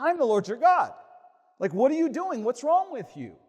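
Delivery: very high, loud, stern, angry commanding tone. Showing the tone of voice we hear when reading: mock-angry commanding tone. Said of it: "that's the tone of voice we hear".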